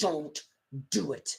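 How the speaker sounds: put-on whisper. Retelling a character's warning to another character, mock-whispering. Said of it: "he's kind of whispering this".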